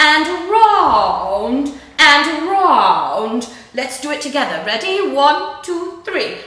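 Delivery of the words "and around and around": very posh, slow, raised, "around" drawn out. Leading a group voice exercise with shoulder circles, posh Queen voice. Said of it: "a very posh voice like the Queen".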